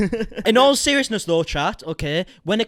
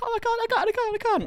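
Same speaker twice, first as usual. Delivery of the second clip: mock sobbing in a very high, tearful voice; 4 dB quieter than usual. Retelling a tearful FaceTime call the day before the house: imitating Becky crying. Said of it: "crying her eyes out".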